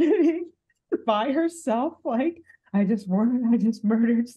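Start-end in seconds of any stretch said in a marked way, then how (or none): 2.7-4.3 empty, blank, shell-shocked, stunned, dazed voice. Voicing a character sitting alone in thousand-yard-stare mode: dazed thousand-yard stare.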